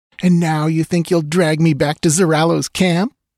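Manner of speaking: scornful, contemptuous sneer. A woman taunts the man who trailed her, sneering. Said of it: "She sneered".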